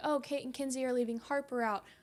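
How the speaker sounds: ordinary delivery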